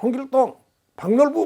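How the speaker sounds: loud, high military roll-call shout. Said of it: "꼭 군대 같잖아요".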